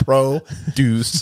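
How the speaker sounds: pause between syllables of 'produce'. Pointing out how a word was said, pause between syllables of 'produce'. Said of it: "I separate it with a hyphen. That's the way I said it. I paused between".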